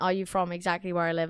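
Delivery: plain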